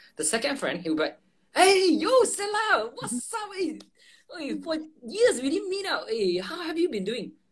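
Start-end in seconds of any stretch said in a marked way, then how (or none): 1.5-7.3 acted very high, hyped-up, friendly, energetic voice. Showing how a second friend greets you after years apart; imitating an energetic friend. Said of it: "can you sense the energy?".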